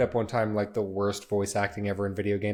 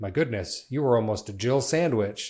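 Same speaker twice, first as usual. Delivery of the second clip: very dramatic, hugely theatrical delivery. Retelling a favorite video game line: imitating Barry's dramatic line delivery. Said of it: "Barry just very dramatically goes".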